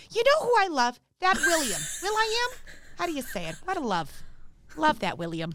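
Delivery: put-on Minnesota accent. Imitating a mom out at dinner, in a Minnesota mom accent. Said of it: "impression of my mom, she like is from Minnesota".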